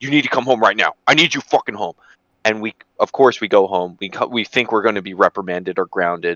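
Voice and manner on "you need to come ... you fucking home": frantic, freaking-out outburst. Retelling the dad's order to come home right now: imitating dad freaking out. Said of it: "our dad freaking the fuck out".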